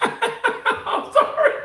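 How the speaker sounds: high, loud, laughing through the words. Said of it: "I'm laughing 'cause".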